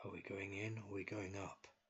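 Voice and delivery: soft, hushed, close half-whisper. Voicing a character who leans forward to ask the group: quiet half-whisper. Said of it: "quietly whisper".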